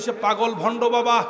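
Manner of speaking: high, loud, mocking shout.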